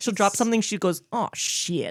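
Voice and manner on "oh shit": slight twang on the words. Retelling how mom swears when she drops something, imitating a little twangy act. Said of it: "she says it with a little twangy act".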